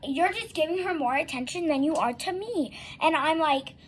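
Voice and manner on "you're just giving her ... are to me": ordinary delivery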